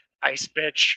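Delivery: barely voiced, hushed whisper under the breath. Retelling an earlier campaign remark: imitating own past whisper. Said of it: "I just whispered under my breath".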